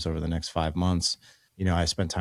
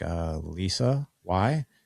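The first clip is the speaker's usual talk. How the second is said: puzzled, confused-sounding voice. Retelling how a woman answered when asked her name: imitating a puzzled reply. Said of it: "looking at me totally puzzled".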